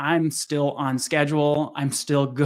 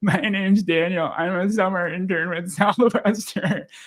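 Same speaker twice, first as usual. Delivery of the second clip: acted tearful delivery, speaking through tears; 4 semitones higher than usual. Retelling knocking on a door as a summer intern: imitating own past crying. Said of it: "I go through the entire thing crying".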